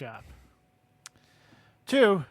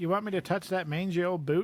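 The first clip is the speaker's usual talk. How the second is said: normal talking voice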